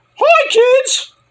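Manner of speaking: cartoon mascot voice, pitched very high. Joking that the company is sold to Mickey Mouse: Mickey Mouse voice. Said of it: "he'll sell it to Mickey Mouse".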